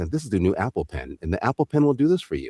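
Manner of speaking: very, very calm announcer-style ad voice. Recalling how a first commercial was approached, calm Apple ad voice. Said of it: "a guy who spoke very, very calmly".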